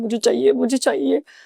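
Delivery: imitated crying like a small child. Retelling own past plea for the pageant chance: imitating crying like a child. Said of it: "मैं रो रही हूँ बच्चे के जैसे".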